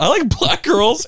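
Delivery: nervous blurting. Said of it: "I just started getting nervous".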